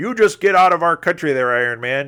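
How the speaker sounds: loud, mad, affronted, indignant Canadian accent. Voicing imagined indignant Canadians, in an angry Canadian accent. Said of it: "they they'd be angry Canadians".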